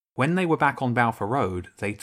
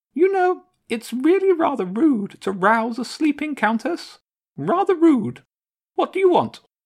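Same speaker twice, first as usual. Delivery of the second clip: tiny, small, very high-pitched voice; 6 dB louder than usual. Roused from sleep on the roof, the Countess answers James, small voice. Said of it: "the Countess's small voice called back".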